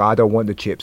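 ordinary talk

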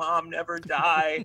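play-acted, tearful, weepy child voice. Recalling being nine and crying over a film, imitating crying. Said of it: "I'm sitting there crying, being like".

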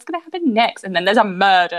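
plain

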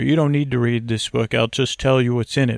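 ordinary talk

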